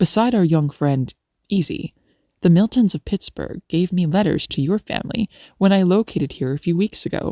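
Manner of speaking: ordinary talk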